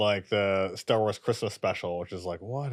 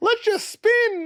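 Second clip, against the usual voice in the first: higher, louder put-on ten-year-old kid voice; 6 dB louder than usual. Retelling a scene from Star Wars, imitating a ten-year-old. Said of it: "imitating a ten-year-old".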